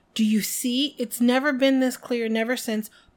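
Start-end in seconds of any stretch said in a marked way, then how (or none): none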